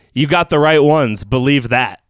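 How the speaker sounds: plain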